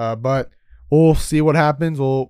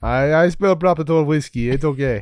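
put-on Russian accent. Joking with the others in a group conversation, talking like a Russian. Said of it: "I don't know why you're talking like a Russian right now".

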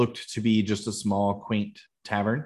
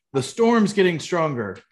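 high, loud, carrying yell; 8 semitones higher, 4 dB louder than usual. A town guard swings the theater door open and calls inside, yelling. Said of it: "yells into the theater".

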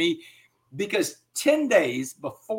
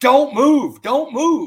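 shrill, very loud, top-of-the-lungs screaming; 9 semitones higher, 9 dB louder than usual. Telling how a SWAT cop stood over him, retelling the cop screaming. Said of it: "he's screaming at the top of his lungs".

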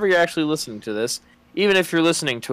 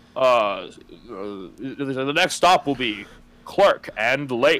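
flat, automated train stop announcer voice. Joking about recording on the train, imitating the stop announcement: Metro train announcement impression. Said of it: "I do a really good impression of the Metro trains".

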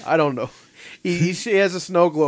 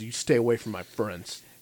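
put-on aggressive tone, quieter; 4 semitones lower, 6 dB quieter than usual. Retelling a scene where Billy jumps in front of Bukla: mock-aggressive tone. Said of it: "like in a aggressive tone".

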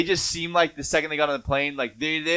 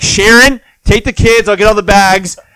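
put-on stressed, fed-up dad voice, louder; 6 semitones higher, 14 dB louder than usual. Acting out a dad after a seven-hour flight to Hawaii, imitating a stressed-out dad. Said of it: "the stressed out dad".

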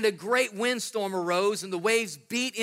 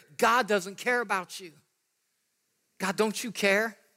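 put-on, acted-out whisper. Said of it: "the enemy's gonna whisper in your ear".

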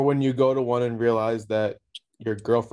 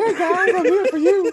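put-on tiny voice, much higher, louder; 5 dB louder than usual. Voicing an imagined guy who would have a surprising voice: tiny small voice. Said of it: "He's going to have like a small ass voice".

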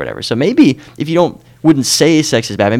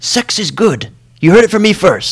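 put-on English accent, very high pitch; 11 semitones higher, 3 dB louder than usual. Recalling a theology professor's remark to the class, speaker imitates Dr. Baggett's English accent. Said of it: "in his English accent".

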